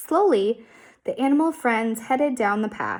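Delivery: ordinary delivery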